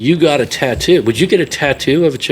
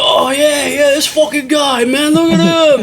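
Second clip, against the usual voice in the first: bad put-on British accent, very high; 12 semitones higher than usual. Imitating British fans reacting to a posted photo: horrible British accent. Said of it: "that's my horrible British accent".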